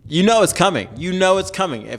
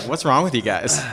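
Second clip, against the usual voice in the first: plain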